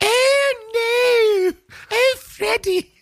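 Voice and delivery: put-on high, slow, proper British accent, wailing. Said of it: "very, like, proper British".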